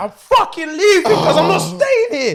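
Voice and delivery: high, loud panicked crying. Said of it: "in a panic".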